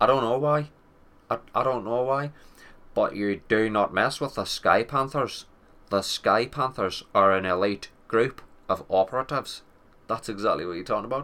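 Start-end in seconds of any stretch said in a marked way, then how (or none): 2.9-9.6 thick, heavily laid-on Irish brogue. Talking up a gaming squad called the Sky Panthers: thick Irish accent. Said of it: "you've gotta say it with a thick, thick Irish accent".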